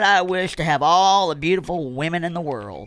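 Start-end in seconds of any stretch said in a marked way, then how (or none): none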